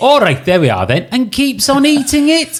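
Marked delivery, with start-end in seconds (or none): 0.0-1.1 put-on Welsh accent, pitched higher. Retelling a scene from Notting Hill: Welsh accent as Spike. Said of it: "just a great Welsh accent".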